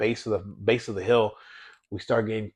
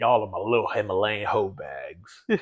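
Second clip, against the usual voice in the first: put-on voice, mumbled with lip full of dip. Retelling what he used to call the group, in a Sling Blade voice with a dip. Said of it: "with with a huge ass dip in his".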